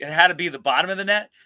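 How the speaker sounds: sarcastic, cutting delivery. Retelling a remark to a brother after a missed shot: retelling own sarcastic remark. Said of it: "I said to him sarcastically".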